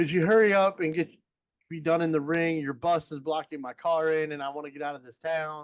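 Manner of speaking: mocking, taunting sarcasm. Recounting a heel's taunt in the ring, retelling a sarcastic taunt. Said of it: "he was being sarcastic about it".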